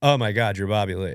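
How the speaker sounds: put-on starstruck, excited outburst. Retelling his own reaction on meeting a comedian: imitating his own starstruck reaction. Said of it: "That was my reaction".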